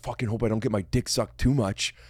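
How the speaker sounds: put-on arrogant, cocky, cartoon bro voice. Describing a stand-up bit about men and women, impression of an arrogant guy. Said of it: "my impression of the guy".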